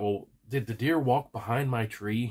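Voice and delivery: ordinary talk, nothing marked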